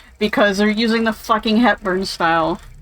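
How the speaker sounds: usual speaking voice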